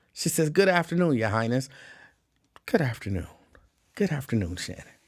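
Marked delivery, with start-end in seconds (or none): none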